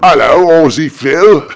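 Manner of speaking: put-on Cockney accent. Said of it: "It's a Cockney accent".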